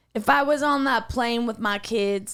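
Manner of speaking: attempted Boston accent that comes out Southern. Asked to try a Boston accent, attempting a line that comes out sounding Southern. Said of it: "no, that's Southern".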